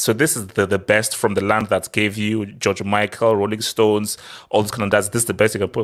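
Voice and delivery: ordinary talk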